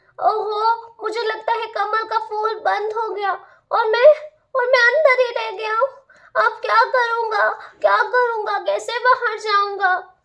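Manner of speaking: sweet, high, innocent little bee voice. A bumblebee trapped inside a closed lotus flower speaks: innocent little bumblebee voice. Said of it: "The innocence of the bumble bee".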